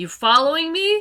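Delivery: very loud, shrill, high shout. A character calls out to someone she saw earlier: shouting. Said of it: "You're shouting this".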